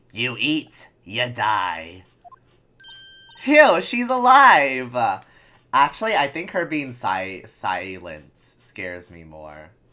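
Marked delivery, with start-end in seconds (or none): 0.2-2.1 mock elderly woman voice. Voicing the grumpy guard lady who warns against eating. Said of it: "I hate doing her voice".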